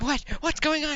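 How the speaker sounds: frantic, very high, hyperventilating panic. Voicing a lizard man reacting to things thrown nearby: freaking out, hyperventilating. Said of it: "he's really freaking out, like, hyperventilating".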